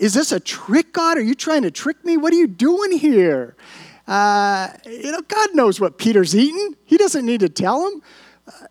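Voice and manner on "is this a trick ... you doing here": acted indignant, offended tone, high-pitched. Reading verse 14, the speaker acts out Peter's reply to God, imitating an offended tone. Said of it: "peter just kind of takes offense".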